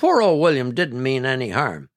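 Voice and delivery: ordinary delivery, nothing marked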